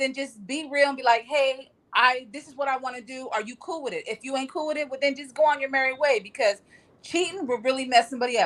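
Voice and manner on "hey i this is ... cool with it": ordinary talk, nothing marked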